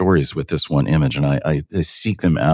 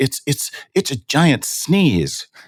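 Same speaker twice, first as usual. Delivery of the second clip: put-on very high, swooping, excited child voice; 10 semitones higher than usual. Retelling a four-year-old's outburst in the studio: imitating a child exclaiming. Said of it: "And he exclaims".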